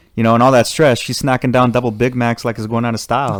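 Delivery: ordinary delivery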